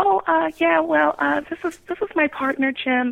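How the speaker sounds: timid, hesitant, sounding afraid and unsure. Showing how not to make an introduction, in an afraid, unsure tone. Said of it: "Don't say it like, I'm so afraid of what you're going to think, because just that small tone in your voice".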